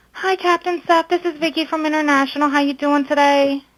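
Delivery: sweet, cutesy little voice. Greeting the captain on a transferred phone call: cute little voice. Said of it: "She's trying to have that little cute voice".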